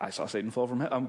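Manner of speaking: mock deadpan, flat, underwhelmed tone. Acting out Jesus's reply to the report of incredible things, mock-unimpressed. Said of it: "really doesn't sound impressed".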